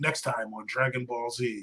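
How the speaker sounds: hushed, soft anime narrator voice. Explaining how the commentator sounded when the show aired: Dragon Ball Z commentator voice. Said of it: "a commentator. He'd be like".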